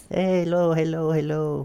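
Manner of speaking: mock Arabic-accented voice. Imitating the Arabic speaker's accent after saying she cheats with it: imitating Mommy's accent. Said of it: "I don't even know what the accent".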